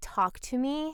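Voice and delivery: ordinary talk, nothing marked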